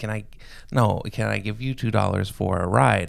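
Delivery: ordinary delivery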